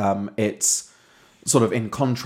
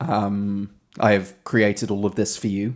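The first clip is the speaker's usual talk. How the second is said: usual speaking voice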